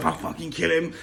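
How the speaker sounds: put-on pissed-off anger. Speaker acting out how a man said it, in a put-on pissed-off tone. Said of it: "when you're pissed off... in that sort of tone".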